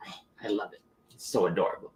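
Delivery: put-on harsh Spanish accent, very soft and hushed. Telling about hanging out with the speaker's mother, quoting her; imitating mom's harsh Spanish accent. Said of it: "in her harsh Spanish accent".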